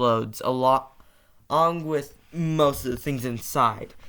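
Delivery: ordinary delivery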